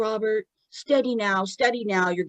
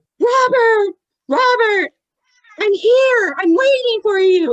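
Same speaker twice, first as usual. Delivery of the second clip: very loud, very high, desperate shrieking; 12 semitones higher, 8 dB louder than usual. Retelling a story, the speaker acts out the mother Liz screaming desperately into the computer. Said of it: "desperately screaming into the t- like like into the computer".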